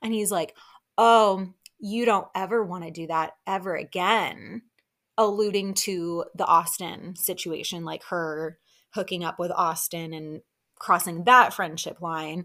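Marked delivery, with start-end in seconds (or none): 1.0-4.6 put-on smug, condescending tone. Retelling Shep's remark to Taylor: smug condescending Shep imitation. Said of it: "he just says it all smug and condescending".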